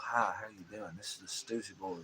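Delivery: soft, soothing radio voice. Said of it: "talking in a much more soothing voice".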